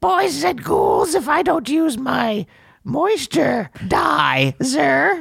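very high, creaky horror-host croak, slow and swooping. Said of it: "that's more like what the Crypt Keeper sounds like".

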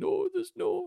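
very high, fake sobbing voice. Complaining about a new rule on drinking, in a fake crying voice. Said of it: "That's me crying voice as well".

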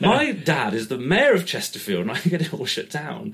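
put-on posh voice, loud and swooping. Retelling trying to make people believe his dad is the mayor: posh boy voice. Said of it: "I'm a posh boy voice".

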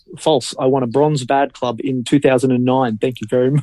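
ordinary talk

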